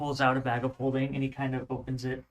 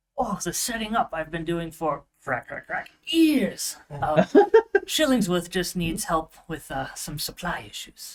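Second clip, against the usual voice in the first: put-on high, raised, loud old gnome voice; 5 semitones higher, 5 dB louder than usual. Voicing an old gnome shopkeeper greeting his first customers: Shillingsworth, old gnome voice. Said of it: "an old gnomish man, and old in gnomish years too".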